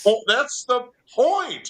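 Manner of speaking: shouting. Arguing a point excitedly to another speaker: raised voice, yelling. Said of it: "sorry, I don't mean to yell".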